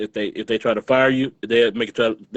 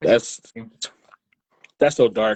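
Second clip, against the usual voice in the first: speech stifled and choked by held-back laughter. Reacting to a dark story about a nurse: holding back laughter. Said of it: "I'm trying not to laugh".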